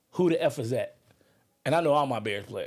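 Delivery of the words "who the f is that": ordinary delivery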